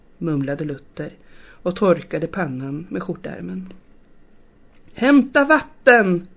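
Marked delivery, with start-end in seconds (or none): 4.9-6.2 loud, high-pitched, repeated screaming. As the fire spreads toward the church door, a man calls again, screaming. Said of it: "skrek han igen".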